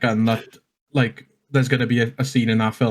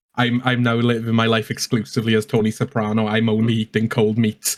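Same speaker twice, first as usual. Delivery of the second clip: plain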